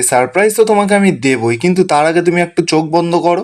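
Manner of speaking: ordinary talk, nothing marked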